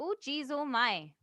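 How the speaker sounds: put-on Minnesota accent, high, slow and unhurried. Asked for an accent, the speaker tries a Minnesota accent. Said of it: "Can you so do a Minnesota accent?".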